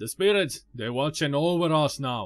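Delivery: bad put-on Jamaican accent. Reading out a game companion's line: bad Jamaican accent as Sulik. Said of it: "I can't do a Jamaican accent".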